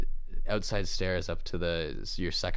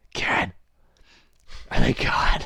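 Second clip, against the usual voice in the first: loud, high-pitched whisper-shout; 5 semitones higher, 8 dB louder than usual. Recounting calling across the yard to Kieran, retelling a whisper-yell. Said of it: "I kind of whisper yell across the yard to Kieran".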